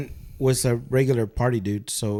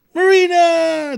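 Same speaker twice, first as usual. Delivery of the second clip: put-on very high, loud drunken shout; 7 dB louder than usual. Retelling walking in on a friend while drunk: imitating own drunk shouting. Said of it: "like, in a drunk way".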